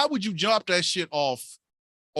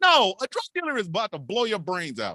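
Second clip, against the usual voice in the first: ordinary talk, nothing marked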